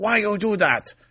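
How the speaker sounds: very high-pitched, put-on Chinese accent. Retelling a comedian's bit about her mom: imitating a chinese accent. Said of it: "My mom talks in a Chinese accent. It goes like this".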